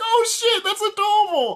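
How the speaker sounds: high, gushing, laughing delivery. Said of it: "I'm like".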